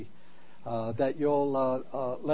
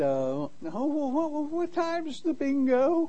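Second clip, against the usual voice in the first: put-on little old lady voice, much higher; 12 semitones higher than usual. Telling how a caller spoke to his wife on the phone, little old lady voice. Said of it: "sounded like a little old lady".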